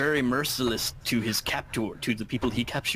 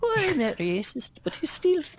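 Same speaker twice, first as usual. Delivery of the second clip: put-on old lady voice, much higher. Retelling what a woman said, done in an old lady voice. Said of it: "is that your old lady voice?".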